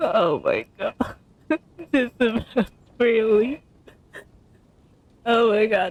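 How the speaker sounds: words breaking up into helpless laughter. Reacting to hearing Ayana say "bro": laughing while talking. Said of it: "I am laughing so hard".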